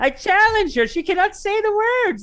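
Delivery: cocky, high, loud voice.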